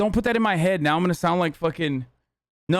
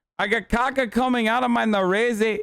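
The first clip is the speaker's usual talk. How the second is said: fake Brazilian accent, pitched up; 5 semitones higher than usual. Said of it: "a Brazilian accent is not easy".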